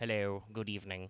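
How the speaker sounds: put-on spooky horror voice. Trying out a spooky voice to greet chat: Vincent Price voice. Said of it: "go for kind of a Vincent Price kind of a thing".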